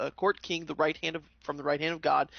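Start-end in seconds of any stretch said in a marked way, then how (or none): none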